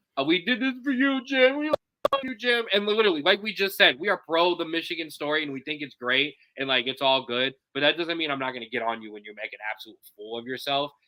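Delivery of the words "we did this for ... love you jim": sobbing, very high-pitched, drawn-out blubbering. Mocking a team's tearful post-game interview: mock crying. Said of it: "crying, blubbering".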